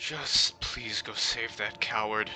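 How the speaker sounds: soft, weary, pleading tone carried on a sigh. Voicing a man with a sword asking the party to save the coward: weary sighing plea. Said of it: "He kinda sighs and looks back at you with, like, weary eyes".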